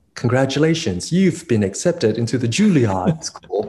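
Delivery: put-on British-accented voice. Retell the phone call telling you that you got into Juilliard, in [name]'s British accent. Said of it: "In her British accent".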